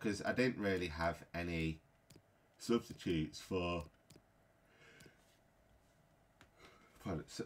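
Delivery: speech drawn out through a yawn. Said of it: "pardon me for yawning".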